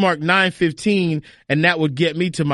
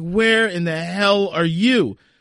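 mock angry, belligerent voice; 2 semitones higher than usual. Retelling the other speaker's phone call: imitating a mad, belligerent voice. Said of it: "you sounded so mad and belligerent".

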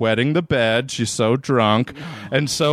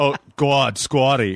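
a put-on Boston accent. Retelling what people said to the speaker: Boston accent. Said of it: "learned how to do an amazing Boston accent".

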